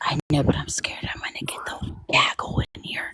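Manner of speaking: creepy, hushed whisper. Talking to another speaker, worried others will hear: whispering. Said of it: "If you don't quit whispering".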